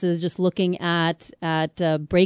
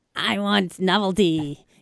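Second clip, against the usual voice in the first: put-on little devil voice. Acting out sociosexual attitudes as a little devil: little devil voice. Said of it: "that was my little devil".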